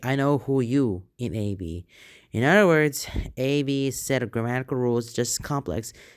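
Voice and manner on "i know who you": normal talking voice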